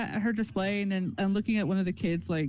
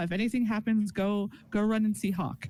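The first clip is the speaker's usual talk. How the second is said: ordinary talk, nothing marked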